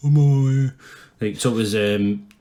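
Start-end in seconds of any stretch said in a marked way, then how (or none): 0.0-0.7 loud, daft, goofy put-on stupid voice. Retelling what was heard from the closet: imitating a stupid voice. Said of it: "you could hear a stupid voice in the closet going".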